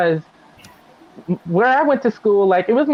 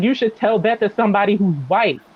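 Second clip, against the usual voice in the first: plain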